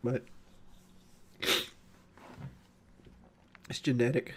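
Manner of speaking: tearful voice, worn from crying. Talking about a cat about to be put down after crying: voice worn from crying. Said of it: "I've been crying for, like, four hours".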